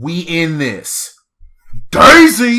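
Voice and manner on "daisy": very loud, high-pitched, booming yell. Cheering for a favorite character, loud booming shout. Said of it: "you have a very loud, booming voice".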